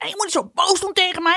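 mock very high shouting, complaining tone. Retelling what a young daughter said: imitating a child shouting. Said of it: "Dan staat ze tegen me te schreeuwen".

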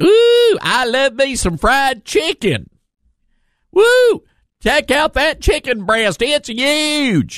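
very high, slow, fake Southern drawl. Showing what a politician visiting the southern states does not say, in a fake southern accent. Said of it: "with a fake southern accent".

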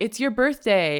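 ordinary talk

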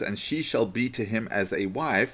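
ordinary delivery

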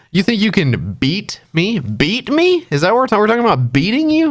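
mock taunting voice. Retelling the peak of a movie where he taunts her, mock-taunting. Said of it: "he's like taunting her".

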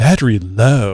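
haughty, snooty little woman's voice. Quoting the nagging voice from the device, in a snooty little woman's voice. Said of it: "This real snooty little woman's voice says".

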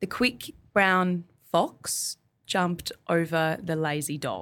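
very slow, drawn-out put-on Australian accent. Asked to show an australian accent with a test sentence: australian accent. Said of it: "now I really have to hear your Australian accent".

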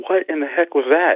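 play-acted high-pitched, startled shriek of sudden alarm. Retelling a niece's reaction to a sliding basket: imitating a scream. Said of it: "jumps out of her shoes almost and screams".

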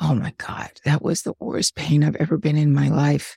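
put-on quiet whisper. Retelling what a father said quietly that night: imitating someone whispering. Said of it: "just sort of whispering".

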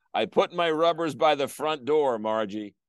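ordinary talk, nothing marked

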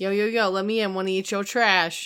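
put-on raccoon creature voice with Philly accent. Riffing with a co-host, joining the bit in a Philly raccoon voice. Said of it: "That's how the Philly raccoons talk".

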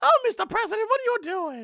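put-on very high-pitched Harlem girl voice. Acting out a woman talking to the president: Harlem girl voice. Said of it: "my Harlem Girl voice".

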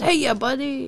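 put-on cheery, eager, high, happy, enthusiastic tone. Imitating a delivery driver greeting at the door: imitating someone happy and enthusiastic. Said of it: "he's very happy and enthusiastic".

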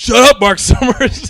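put-on high-pitched yelling.

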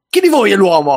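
acted, nasty, cruel tone. Speaker retells how someone read the names and asked the group: mock-nasty question. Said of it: "con una cattiveria".

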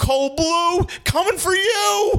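very high-pitched, very slow, every word stretched out. Retelling a friend's line on seeing Kevin Bacon: Kevin Bacon impression. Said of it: "And it sounds like Kevin".

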